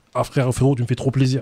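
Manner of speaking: usual speaking voice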